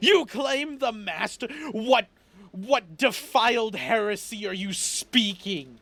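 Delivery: angry, high-pitched outburst. Game master voicing a character told his own god did this, getting really angry. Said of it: "he starts like kind of get real like angry".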